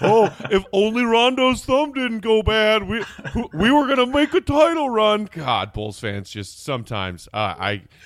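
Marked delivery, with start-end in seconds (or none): 0.0-5.3 dopey, dumb, clueless-sounding voice, pitched up. Mocking what Bulls fans say about the failed season: unintelligent Bulls fan impression. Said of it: "my unintelligent Bulls fan impression".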